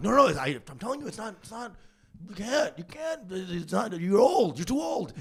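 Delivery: put-on flustered, insistent, repeating, yelling. Retelling an argument with the uncle about insurance: retelling own yelling. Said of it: "and so I am yelling".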